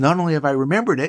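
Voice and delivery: ordinary talk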